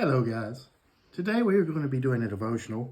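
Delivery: ordinary delivery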